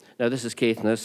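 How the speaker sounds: ordinary delivery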